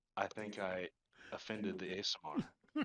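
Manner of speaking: soft mutter under the breath, to oneself. A character looks toward Torin and speaks under the breath. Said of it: "say under my breath".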